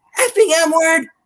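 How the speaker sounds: very high hollered yell. Retelling someone driving by the church and yelling: retelling a passing driver's yell. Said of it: "drives by on a nearby street and yells".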